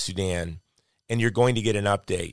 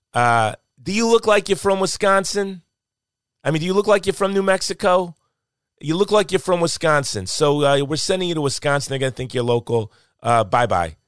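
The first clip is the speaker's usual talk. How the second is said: amateur, put-on New Jersey accent, high; 7 semitones higher, 4 dB louder than usual. Quoting a man who sent the speaker to Wisconsin, in a New Jersey accent. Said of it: "That's my New Jersey accent".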